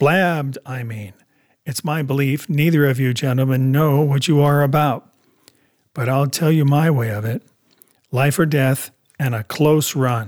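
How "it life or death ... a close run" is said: ordinary delivery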